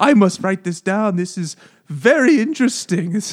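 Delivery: put-on German accent. Retelling what a man in the story said, in a German accent. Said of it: "talking in you know the german accent".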